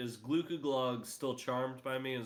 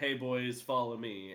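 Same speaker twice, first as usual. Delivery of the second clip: plain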